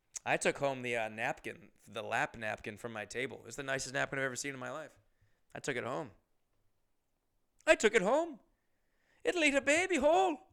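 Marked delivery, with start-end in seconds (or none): 9.3-10.4 put-on grandmother voice, higher and louder. Imitating a grandmother hearing about a new pit bull: impression of my grandma. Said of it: "my impression of my grandma".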